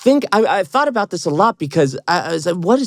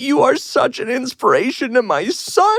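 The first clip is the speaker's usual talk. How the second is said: crying through the words, tearful and pitched up; 7 semitones higher than usual. Retelling what a fan's mother said to them: imitating a mother crying. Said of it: "and she starts crying".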